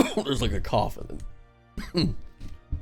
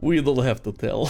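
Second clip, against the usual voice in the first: put-on, vaguely European accent. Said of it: "in his vaguely European accent and says".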